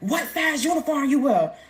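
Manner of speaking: mock guard yelling, high-pitched. Retelling intake at prison, staff yelling a question: imitating a guard yelling. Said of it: "yelling at".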